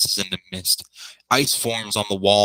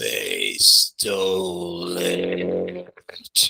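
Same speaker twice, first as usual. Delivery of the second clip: slow, creeping, sickly, rough croak from the throat; 3 semitones lower than usual. A narrator voices a creature speaking from its throat, in a slow sick croaking voice. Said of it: "a slow, sick voice creeps out of its throat as it croaks".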